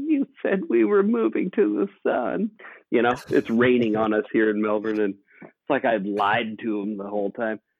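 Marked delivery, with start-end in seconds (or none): 0.1-2.5 put-on crying little girl voice, very high-pitched, tearful. Retelling a six-year-old daughter's complaint in the rain: imitating a crying daughter. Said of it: "and she's crying".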